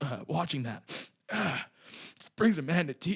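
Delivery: fake choked-up, tearful crying voice. Pretending to be moved while watching a clip, fake crying. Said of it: "I'm gonna get back in the scene".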